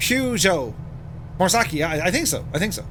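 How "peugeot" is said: Peugeot with the weight on first syllable peu. Disagreeing on how to say Peugeot, stress on first syllable of Peugeot. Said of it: "I was emphasizing on the first syllable".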